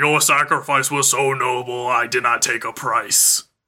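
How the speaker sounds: slow, drawn-out magic mirror voice. Recapping an anime scene where the mirror speaks, booming mirror voice. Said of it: "booming voice comes out and it's like".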